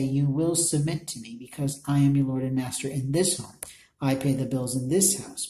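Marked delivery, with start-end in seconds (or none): none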